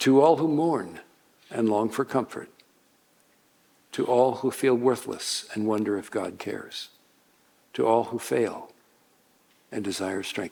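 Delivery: slow, calm, low, eloquent fatherly voice. Preacher showing how he addresses weary listeners, slow, calm, fatherly. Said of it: "I say it more slowly".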